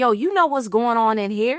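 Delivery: ordinary talk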